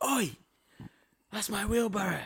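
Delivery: put-on, very high-pitched, shrill man's yell. Retelling a bloke claiming his wheelbarrow: imitating a bloke shouting. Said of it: "I hear this bloke shout".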